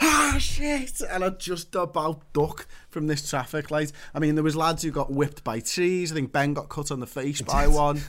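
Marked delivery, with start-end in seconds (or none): 0.0-1.0 mock very high, sudden scream. Retelling turning around to find a traffic light right in front of him; re-enacted screaming. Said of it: "I'm screaming and I'm like".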